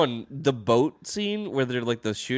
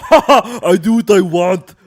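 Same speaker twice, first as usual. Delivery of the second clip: booming, very slow, drawn-out, pitched-up voice; 8 semitones higher, 15 dB louder than usual. Imitating a clip of Arnold Schwarzenegger talking about cigars: Arnold Schwarzenegger voice. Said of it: "a good voice, [name]".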